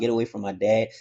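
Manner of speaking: ordinary delivery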